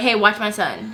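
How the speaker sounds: ordinary talk, nothing marked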